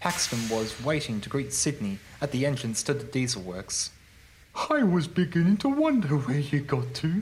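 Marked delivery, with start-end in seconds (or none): 4.7-7.2 loud, higher-pitched speech said through laughter. Reading a story, Paxton greets Sydney at the diesel works entrance: laughing. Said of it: "laughed Paxton".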